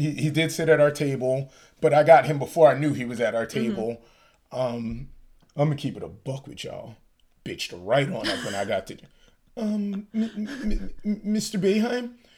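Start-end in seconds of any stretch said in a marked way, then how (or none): 9.6-12.1 timid, meek, feeble little voice, pitched up. Retelling how they addressed a man at their table, imitating a meek, feeble voice. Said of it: "I said it in such a meek, feeble voice".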